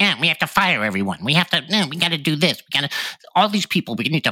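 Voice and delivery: put-on tantrum rant. Speaker mocking conservatives who react to things they dislike, imitating a tantrum. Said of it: "they're tantrum conservatives".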